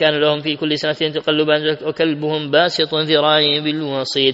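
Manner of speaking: ordinary talk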